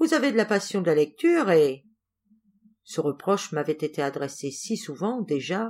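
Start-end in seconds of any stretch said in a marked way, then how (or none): 0.0-1.8 chiding, reproachful scolding tone. The boss hands back a book the narrator brought along, scolding tone. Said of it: "avec un ton de gronderie".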